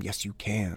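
soft, close, encouraging half-whisper. Retelling a teammate half-whispering encouragement while being carried: imitating a half-whisper. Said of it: "he'd just be whispering in my ear".

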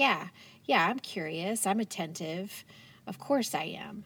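usual speaking voice

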